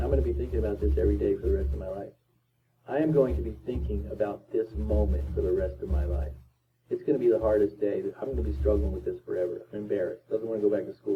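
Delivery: normal talking voice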